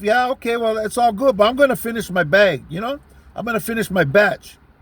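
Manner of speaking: usual speaking voice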